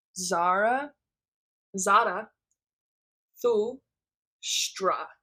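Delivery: very slow, spoken syllable by syllable. Pronouncing a name they find hard: very slow, syllable by syllable. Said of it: "I'm going to say it really slow".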